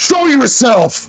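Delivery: screaming, yelling loudly. Rushing toward a figure in the snow, in character: screaming.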